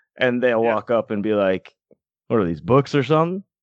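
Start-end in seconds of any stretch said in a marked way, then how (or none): 2.3-3.4 quick, clueless-sounding voice. Describing people who walk up to the books, clueless passerby impression. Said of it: "That's my impression of three out of the four people".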